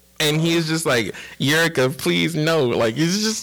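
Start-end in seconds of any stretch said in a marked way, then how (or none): 1.4-2.7 put-on crying voice. Retelling a scene where Yusuke is in tears: imitating Yusuke crying.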